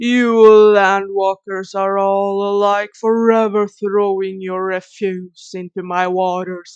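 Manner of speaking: ancient, great sea-serpent monster voice. A game master voices the Master Serpent answering the players in the cave, booming. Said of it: "A booming voice sounds throughout the cave".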